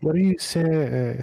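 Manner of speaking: slow, drowsy voice trailing off. Voicing a character falling asleep mid-question: falling asleep mid-sentence. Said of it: "I imagine I fall in asleep before I finish that".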